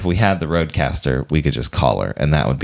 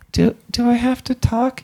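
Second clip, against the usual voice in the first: very high, stumbling, unsure mom voice. Acting out a talk with a parent about the show: imitating mom's hesitant questioning. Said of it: "I think that's pretty accurate".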